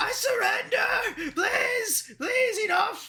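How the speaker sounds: shrieking at top of lungs. A game master voices a foe begging to surrender, shrieking at the top of lungs. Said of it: "He is shrieking at the top of his lungs".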